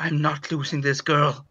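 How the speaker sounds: fierce, resolute, angry half-whisper. Voicing a doctor trying to save a patient: angry determined half-whisper. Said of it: "whispering in a kind of an angry but determined voice".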